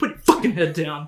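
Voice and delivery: put-on really annoyed, low, fast voice. Quoting a line from a film, retelling an annoyed order. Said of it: "He's so he's so annoyed".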